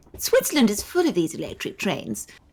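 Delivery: upper-class, posh lady's voice. Reading a story aloud with a partner, voicing the young woman in a posh lady voice. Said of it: "I'll be a posh lady".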